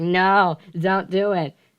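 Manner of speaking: put-on squealing, dragged out very slowly. Retelling being pinned down by someone, imitating own screaming and squealing. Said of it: "So I'm screaming, squealing".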